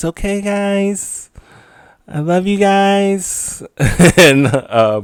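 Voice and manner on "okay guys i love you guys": sugary little voice, high and slow, "guys" drawn out. Imitating how Holly addresses people: Holly's sweet little voice. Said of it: "She does the sweet little voice".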